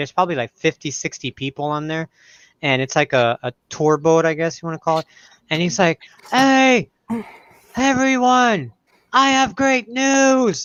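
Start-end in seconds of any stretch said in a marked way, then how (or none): 6.3-10.7 put-on yell, higher. Retelling a man yelling from a high balcony at a tour boat: imitating someone yelling. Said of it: "yelling at this boat".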